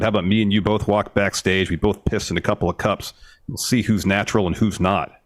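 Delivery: ordinary talk, nothing marked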